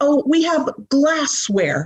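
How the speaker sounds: acted, high, sing-song, sweetened, sarcastic official tone. Mocking officials who call crack pipes glassware: mocking imitation of officials. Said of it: "beautify it and make it sound pretty".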